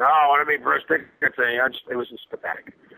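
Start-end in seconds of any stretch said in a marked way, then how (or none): 0.0-1.5 put-on drunken slurred voice, higher. Retelling a drunk bandmate arguing to come along: imitating Eric's drunken slur. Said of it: "drunk, slurring his words".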